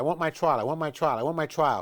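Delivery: ordinary talk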